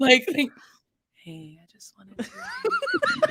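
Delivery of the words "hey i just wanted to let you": very high, gentle, calm, soothing half-whisper. Mocking how bad news gets delivered, the speaker imitates it in a mock-calm voice. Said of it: "in like this calm ass voice".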